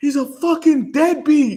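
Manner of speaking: very high, loud, jeering shouted yell. Retelling how a friend yelled at a passing wrestler: imitating a friend yelling. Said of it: "and he yells".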